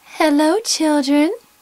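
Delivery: sweet, high-pitched voice. Reading a story aloud: someone greets the children, in a sweet voice. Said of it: "someone said in a sweet voice".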